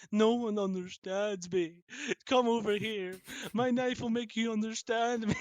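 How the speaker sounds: creepy put-on psycho serial killer voice. Joking that the Dark Ones act like killers: put-on psycho serial killer voice. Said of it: "they're like psycho serial killers".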